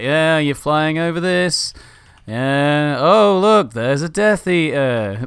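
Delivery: mock weary bored drone, high and very slow. Retelling a tour worker who hates his job: imitating a bored employee. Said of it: "really fucking hates his job and is like".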